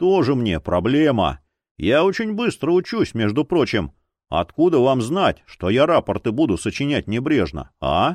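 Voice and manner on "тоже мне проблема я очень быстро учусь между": plain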